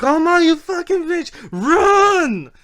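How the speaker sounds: very high, very loud, slow, shrill yell, stretched out. Retelling yelling at a game character: retelling yelling at the game. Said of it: "I used to fucking yell at that".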